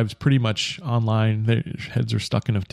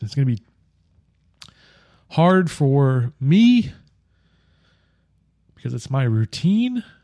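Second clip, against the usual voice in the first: slow, choked-up voice catching with emotion; 3 semitones higher, 4 dB louder than usual. Announcing to listeners that the podcast will end, choked up. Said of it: "Didn't think I was gonna get choked up".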